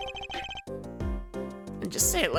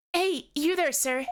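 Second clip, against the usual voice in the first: put-on young girl's voice; 10 semitones higher, 4 dB louder than usual. Voicing Trucy calling out to someone: very good Trucy impression. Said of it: "that was a very good Trucy impression".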